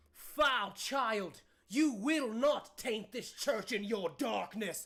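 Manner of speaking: big, booming, loud proclamation-style voice. Game master voicing Elizabeth Brassica during a church battle: booming Elizabeth Brassica voice. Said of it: "you hear a booming voice".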